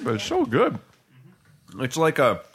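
talking with mouth full. Speaker eating a chip mid-conversation, talking with mouth full. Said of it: "My mouth is full of chips and dip".

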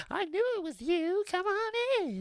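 tiny, cute, very high, bouncy, sing-song little voice. Retelling a scene where Charles Wallace happily opens the door to a visitor. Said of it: "in his little cute voice".

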